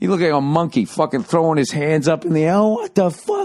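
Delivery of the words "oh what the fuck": put-on, high-pitched, furious outburst of outrage. Retelling how a kid in an orange shirt reacted, imitating a furious outburst. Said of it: "just flipped out".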